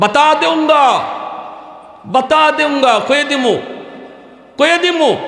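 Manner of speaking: high, eager calling out from a distance.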